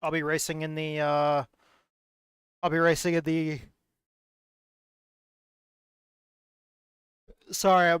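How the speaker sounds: exhausted, yawning, stuttering and stumbling over words. Racer listing upcoming iracing races while exhausted, stuttering and yawning. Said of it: "I'm fucking stuttering and I'm yawning and I'm I'm exhausted".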